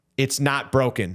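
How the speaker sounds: thoroughly irritated, super annoyed tone. Retelling a partner's reply from inside the closet: imitating an annoyed voice. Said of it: "your super annoyed voice".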